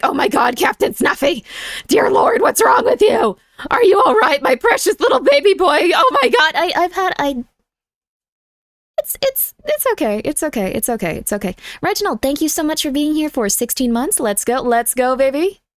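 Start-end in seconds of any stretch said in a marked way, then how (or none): 0.0-6.5 put-on high, frantic fussing and fretting. Apologizing for own earlier fussing over Captain Snuffy: mock frantic fretting. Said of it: "sorry for just being like".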